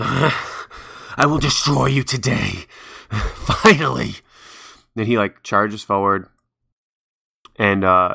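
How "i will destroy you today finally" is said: each word dragged out, rough voice. Voicing a charging fighter who calls out to the party: roaring. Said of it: "lets out, like, a roar and says".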